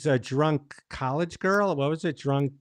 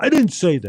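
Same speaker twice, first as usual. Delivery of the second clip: mock loud, angry, heated, losing-it meltdown; 7 dB louder than usual. Asking a guest about an impression: Dustin Hoffman having a meltdown. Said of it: "Dustin Hoffman having a meltdown".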